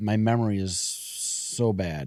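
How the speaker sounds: ordinary delivery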